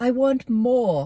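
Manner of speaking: British-ish accent, dropped R. Showing how the actresses do their British accents, in a mediocre British-ish accent with dropped R's. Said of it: "they just drop their R's like".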